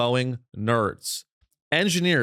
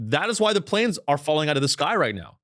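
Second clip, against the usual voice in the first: plain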